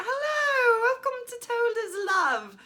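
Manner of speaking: very high, very loud, goofy, swooping British accent. A podcast host recalls her first try at opening the episode, in a British accent. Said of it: "I started in a British accent".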